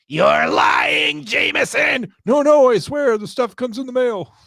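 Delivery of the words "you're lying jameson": high, gravelly villain voice. Doing a movie scene for your audience, you play the Green Goblin. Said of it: "did you guys like my Green Goblin impression".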